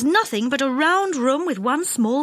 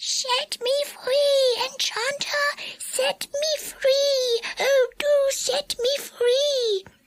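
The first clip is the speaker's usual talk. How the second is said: small, very high squealing voice, drawn-out "free"; 12 semitones higher than usual. A narrator reads a cry from inside a kettle in Mister Changeabout's squealing voice. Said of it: "From the kettle came a small, squealing voice".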